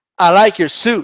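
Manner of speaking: plain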